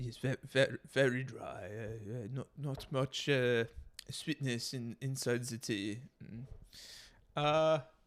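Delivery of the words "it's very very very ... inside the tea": soft, slow, odd fake French accent. Tasting a homemade tea, in a weird French accent. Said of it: "I don't know what kind of accent that was".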